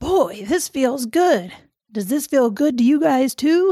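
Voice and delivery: put-on stock male character voice. Retelling how Esther's husband Jerry spoke to the cheering crowd, in a Keanu Reeves voice. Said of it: "I'm making Jerry sound like Keanu Reeves because that's my man voice".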